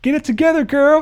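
play-acted, very high, shrill screamed outburst. Recounting a man screaming at a crying woman during her speech, retelling a scream. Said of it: "he just screams out like".

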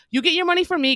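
snippy, full of attitude. Recounting a customer who got an attitude when asked for id; imitating a sassy customer. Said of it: "cranking her neck at me".

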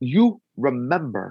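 put-on Tibetan-accented speech. Retelling what a monk said to the speaker, in a broken Tibetan accent. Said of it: "a very like broken Tibetan tongue with his accent".

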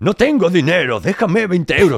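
high, loud, grand declaiming orator's voice. Demonstrating how a line can be said, in an orator's voice. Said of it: "con la voz de orador".

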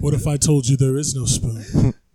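very deep, booming voice, dropped low and projected. Quoting the film line in the same bit: deep Morpheus voice. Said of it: "I did it with my deep voice".

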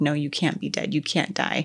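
mock tearful crying, acted sobbing. Retelling a scene where a character finds another dead, imitating her crying. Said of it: "she's crying".

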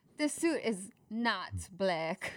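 put-on, swooping, sing-song Eastern European accent. Urged to give another Borat impression, doing a Borat impression. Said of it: "Give me another Borat impression".

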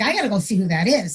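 ordinary delivery

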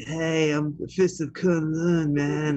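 put-on slow, drawling stoned surfer voice. Imitating the cartoon Iron Fist as a surfer stoner: surfer stoner Iron Fist voice. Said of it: "he's like a surfer, a stoner".

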